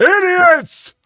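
very high-pitched, loud hollering outburst. Doing an impression of an old-timer complaining about the team. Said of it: "Edo Bradovich impersonation ever".

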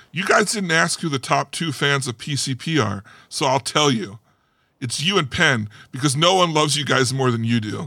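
plain

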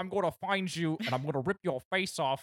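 high, menacing ranting voice. Acting out a rival's reply to online comments: imitating Andrew Tate. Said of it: "He's like".

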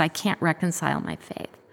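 ordinary talk, nothing marked

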